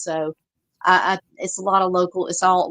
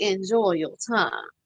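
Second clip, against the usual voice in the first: put-on Savannah Southern accent; 3 dB quieter than usual. Retelling her movie line as she locks a woman in a cell, Savannah Southern accent. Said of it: "that was exactly how she wanted me to say".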